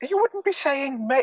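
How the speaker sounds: offended, indignant voice.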